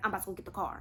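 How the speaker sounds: breathy, hushed whisper, very quiet, barely audible. Retelling what someone whispered after the bill was paid: imitating a whisper. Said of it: "he gets up and he whispers to me".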